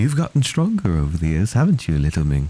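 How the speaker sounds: whispering softly. Voicing a character carried by spirits, whispering to someone below: whisper. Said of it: "I sort of whisper below".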